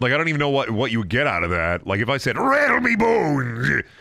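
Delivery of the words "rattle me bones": high-pitched put-on skeleton voice. Trying out a line while wondering how it would sound, in a skeleton voice. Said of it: "And like a skeleton voice".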